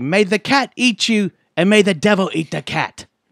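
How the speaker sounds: put-on Irish accent. A speaker asks another whether he said this to someone: irish accent. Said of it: "like a fucking Irishman".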